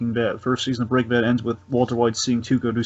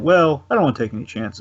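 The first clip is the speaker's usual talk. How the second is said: put-on nonchalant character voice; 2 semitones higher than usual. Imagining how Lalo would explain a killing: nonchalant Lalo voice. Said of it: "say it all kind of all nonchalant".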